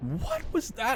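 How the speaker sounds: high voice breaking and cracking, sounding confused. Reacting to something sudden in the game: voice cracking. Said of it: "my voice just went into the most voice cracky way possible".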